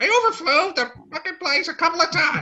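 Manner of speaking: very high-pitched squawky birdlike voice. A storyteller voices a character addressing the group, in a bird voice. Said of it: "he's got like a bird voice".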